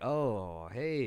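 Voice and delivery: mock weirded-out, awkward surprise. Retelling how people react on seeing the speaker, mock weirded-out greeting. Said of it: "where they're like weirded out".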